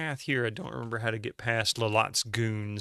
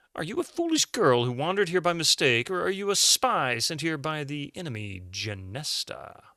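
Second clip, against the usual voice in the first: put-on posh upper-class accent, pitched high; 5 semitones higher, 4 dB louder than usual. Narrator voicing Lalotte questioning a lost girl, in Lalotte's posh upper-class accent. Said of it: "upper class with a posh accent".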